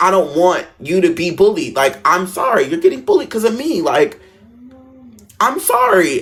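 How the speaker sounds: tearful, crying, begging, pleading voice. Retelling own apology to a friend in a bathroom: retelling own crying plea. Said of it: "And then I started crying".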